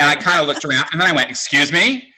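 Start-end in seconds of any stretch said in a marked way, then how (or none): 1.3-2.0 play-acted offended, indignant, affronted, taken-aback tone. Retelling his reaction when a passing guy called him Daddy, mock-offended. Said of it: "like all offended".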